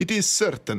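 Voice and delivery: goofy put-on silly, high novelty voice. Speaker giving the Magic 8 Ball's answer a different voice, silly Magic 8 Ball voice. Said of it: "give the Magic eight Ball a different voice".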